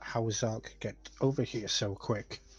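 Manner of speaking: mumbling, muttering to oneself. In character, asking oneself a question aloud: mumbling to oneself. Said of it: "mumbling to myself".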